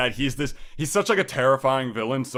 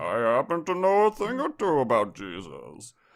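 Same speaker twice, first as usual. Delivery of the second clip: overly polite, swooping, sing-song voice. Joking that the villain sounds like someone handing out pamphlets: Bane voice, overly polite. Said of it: "He sounds overly polite too".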